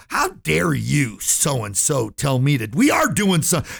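mock-angry man's voice. Speaker retells the meeting leader's reply to the voice, mock-angry. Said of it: "the guy running the meeting got pissed".

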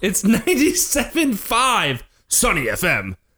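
angry-sounding delivery. Welcoming listeners and giving the radio station's name, in an angry voice. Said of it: "I just gave them like an angry voice".

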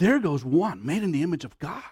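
full of reverent wonder. Showing how we should say this about every person, with awe. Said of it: "we should say that with awe. You know what I'm saying? Like with awe".

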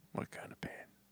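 menacing, creepy, breathy movie-villain style whisper. Asking another speaker about pain, creepy put-on voice. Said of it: "What are you doing right now?".

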